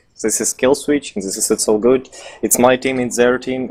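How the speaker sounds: ordinary talk, nothing marked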